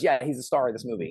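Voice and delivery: ordinary talk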